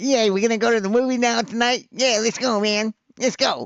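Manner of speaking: squeaky, very high, ratty tough-guy voice. Mocking another debater, imitating him as the ratty guy in a Bronx movie: Neil Constantino impression as a Bronx movie guy. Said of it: "like the little ratty guy on, on any, like, movie".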